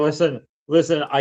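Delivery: ordinary talk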